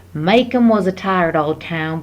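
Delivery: bad, butchered put-on Southern American accent. Reading the opening of To Kill a Mockingbird aloud: bad put-on Southern accent. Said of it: "I butcher a southern accent, but I love doing it".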